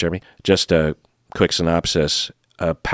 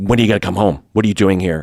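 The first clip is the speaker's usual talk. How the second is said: mock seething, livid, furious tone; 2 semitones higher, 4 dB louder than usual. Retelling a partner showing up at the bar: imitating a livid man. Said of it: "is livid and is just like".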